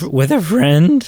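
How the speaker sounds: breaking, cracked voice, cracking mid-phrase. Telling an example about watching a TV series with a friend, voice cracking. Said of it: "I don't know why my voice cracked there".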